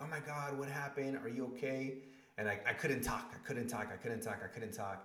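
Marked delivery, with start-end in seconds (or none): 0.0-1.9 alarmed, high, panicked, worried voice. Retelling a phone call where mom fears the worst: imitating mom's panicked worry. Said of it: "we always think, like, the worst".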